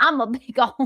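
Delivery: put-on teasing Southern accent. Mimicking Hales for laughs: imitating Hales's Southern accent. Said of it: "easy to impersonate you because of your Southern accent".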